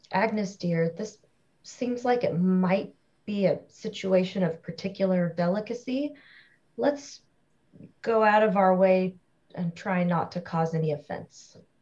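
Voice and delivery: discreet, diplomatic, tactful and careful tone. Scanning for threats while walking, the character speaks to agnes: speaking quietly. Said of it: "I'm going to say kind of quietly".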